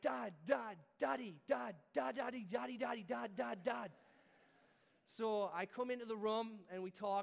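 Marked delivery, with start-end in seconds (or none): 0.0-3.9 play-acted child's urgent repeated calling, rough and creaky. Father retelling his son calling out during a night thunderstorm, retelling a son's shouting. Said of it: "He's shouting in the middle of the night".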